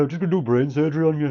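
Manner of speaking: put-on, fake Brummie accent. Speaker imagines a brain surgeon speaking in a brummie accent. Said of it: "a brain surgeon talking in a Brummie accent".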